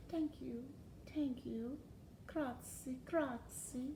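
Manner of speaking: very hushed, soft, courteous, polite murmur. Reading aloud a character bowing to a cheering crowd, very soft. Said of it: "said very softly".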